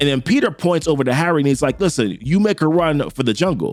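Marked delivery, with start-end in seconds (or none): none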